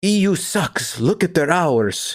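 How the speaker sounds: put-on high, very slow, drawn-out Swedish accent. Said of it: "Turbo's accent. Swedish?".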